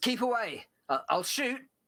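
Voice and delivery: shouting, pitched very high. Voicing a character who warns the players from inside a caravan: shouting. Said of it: "And he's shouting at us".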